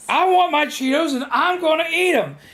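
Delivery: very high, stubborn, furious screaming outburst. Retelling what a stubborn woman said while losing it; retelling an angry yelling outburst. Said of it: "just losing her shit".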